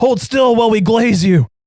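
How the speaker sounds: loud, high shouting voice. Retelling what an attacker shouted while setting the speaker on fire: imitating someone shouting. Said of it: "one of them just shouts".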